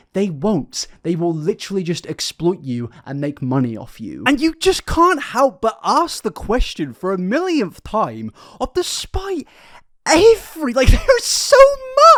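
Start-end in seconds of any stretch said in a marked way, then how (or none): 8.7-12.1 voice flying up to a shrill, very high, loud pitch. Ranting about online gurus exploiting their followers; voice going really high-pitched. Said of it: "my voice just went really high pitched".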